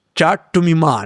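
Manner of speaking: put-on heavy Indian accent, loud, slow, very drawn out. Retelling how a newly hired colleague greets him: imitating a colleague's thick Indian accent. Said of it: "a very thick Indian accent".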